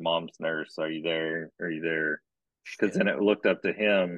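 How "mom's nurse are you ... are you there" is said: ordinary delivery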